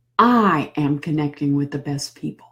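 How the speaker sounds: heavy stress on the opening word I. Affirmations with changing emphasis from day to day, stress on i. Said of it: "you can always emphasize the I".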